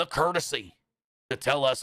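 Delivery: put-on cross voice. Complaining that contracts expired unannounced, in a put-on cross voice. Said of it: "I'm doing this in my cross voice, in my cross dialect".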